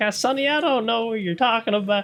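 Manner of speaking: put-on elderly woman voice, pitched very high. Retelling how a man deleting someone's computer files answered them, old lady voice. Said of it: "he had like an old lady voice".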